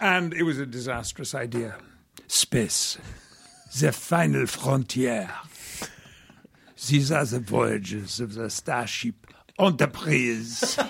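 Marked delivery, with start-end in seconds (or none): 2.3-10.8 narration-style delivery in a French accent. Redoing his old recording of the opening voiceover: Inspector Clouseau French accent. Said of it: "with a French accent".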